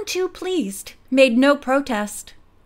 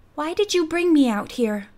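usual speaking voice

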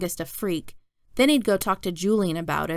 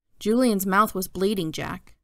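ordinary delivery

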